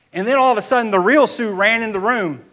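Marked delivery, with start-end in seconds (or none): none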